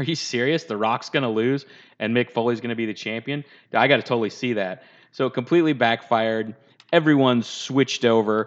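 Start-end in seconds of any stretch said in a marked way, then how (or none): none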